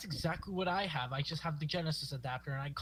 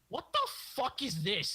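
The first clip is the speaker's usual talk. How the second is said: sweet, high, cute put-on British accent; 7 semitones higher, 3 dB louder than usual. Retelling his reaction on reading his death in the Infinity War script: cute British accent. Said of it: "In his like cute British accent".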